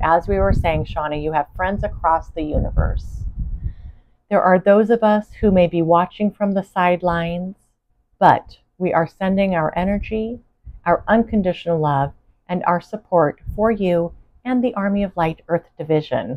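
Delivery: plain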